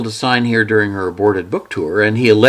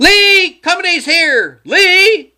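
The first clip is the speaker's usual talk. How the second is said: piercing, shrill screech, very high; 4 dB louder than usual. Myra calls through the house for lee, screeching. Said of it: "In a screech".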